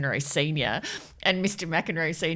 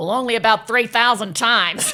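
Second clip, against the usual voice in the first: put-on American accent, higher and louder; 6 semitones higher, 9 dB louder than usual. Retelling an anecdote from a documentary, quoting McEnroe Senior in an American accent. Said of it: "I got to do it in American".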